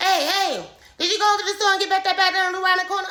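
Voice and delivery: high, loud, rapid-fire, rattled-off chatter. Retelling grandpa's questions the speaker couldn't understand: imitating grandpa talking real fast. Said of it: "'Cause he talked real fast".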